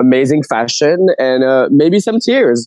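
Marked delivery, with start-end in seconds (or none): 1.7-2.7 full of glee, relishing, pitched-up aside. Listing what to expect in a finale: gleeful. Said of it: "I loved the glee in your voice".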